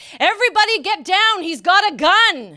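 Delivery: huge, very loud, booming, drawn-out bellow. Recounting a voice from the back of a department store: retelling a big bellowing shout. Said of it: "this big voice bellows from the back".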